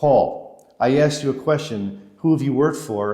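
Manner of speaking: put-on demanding, pressing tone in a French accent. Retelling a man pressing him again in his office: his french accent. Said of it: "in his French accent".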